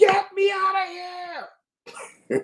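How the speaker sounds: play-acted shrieking cry, pitched way up. Telling of fleeing a place with dead bodies, the speaker is retelling a scream. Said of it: "So I screamed".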